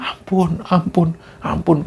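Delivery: play-acted, pained, desperate pleading. Storyteller quoting the cries of a changed voice, retelling pained pleading. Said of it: "Kayak benar-benar nggak kuat nahan sakit".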